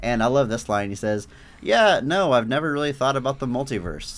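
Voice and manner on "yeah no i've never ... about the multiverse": put-on, mock-sarcastic tone. Quoting a character's dismissive reply to another character, imitating a sarcastic reply. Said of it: "all sarcastically".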